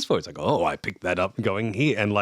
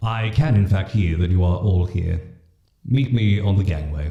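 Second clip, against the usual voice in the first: horrifying, loud, reverberating, otherworldly booming voice; 6 dB louder than usual. The narrator voices an unseen figure calling to the group from below, horrifyingly booming voice. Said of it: "that's a horrifyingly booming voice".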